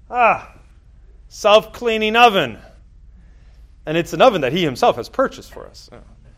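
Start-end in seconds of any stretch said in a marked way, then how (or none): 0.1-2.6 put-on very thick Polish accent, very high-pitched. Quoting a man's offhand remark about the oven he bought them, very thick Polish accent. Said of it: "in a very thick Polish accent underneath the mustache".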